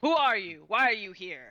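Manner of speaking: loud, challenging shouted voice. A game master voices one of the lizardfolk calling to the players, shouting. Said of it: "One of them shouts to you in Draconic".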